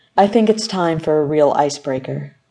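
plain reading voice

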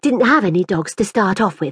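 ordinary delivery

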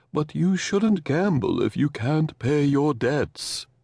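refined, gentle, warm, calming, cultured delivery. Reading a story, voicing Kenneth scolding Cole: cultured, warm, soothing voice. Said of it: "he said in that voice".

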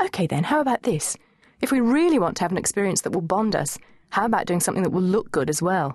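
ordinary delivery

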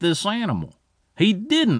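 ordinary delivery

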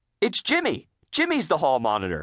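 blurted-out exclamation, called out. A narrator voices a character in a story reading out a list, exclaiming. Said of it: "Mrs. Puff exclaimed".

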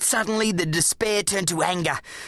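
ordinary delivery, nothing marked

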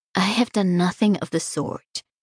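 usual speaking voice

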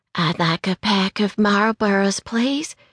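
quiet, soft, modest little voice. A customer at the store counter speaks to the clerk in a small, soft voice. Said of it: "she said in a small, soft voice".

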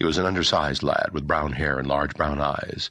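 plain

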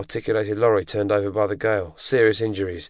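plain reading voice

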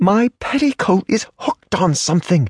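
sharp hissing, pitched very high, complaining. Narrator reads a woman's line to Mr. Reardon: hissed. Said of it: "she hissed".

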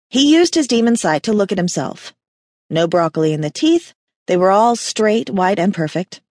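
ordinary delivery

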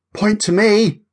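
high, panting, out of breath between words. During a ball game, a player claims a point, panting. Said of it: "Jessica panted".

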